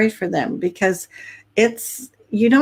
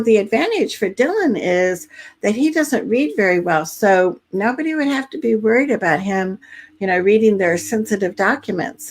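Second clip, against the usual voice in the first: normal talking voice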